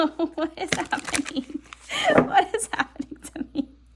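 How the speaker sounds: giggly, schoolgirl-like, laughing through the words. Reacting to a surprising card during a reading, giggling while talking. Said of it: "I'm giggling like a little schoolgirl".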